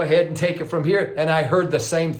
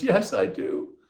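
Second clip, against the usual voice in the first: gentle, tender voice; 3 semitones higher, 4 dB quieter than usual. Retelling how a woman answered his question, imitating her tender voice. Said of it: "she said with this tender voice".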